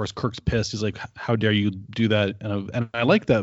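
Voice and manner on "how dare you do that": ordinary talk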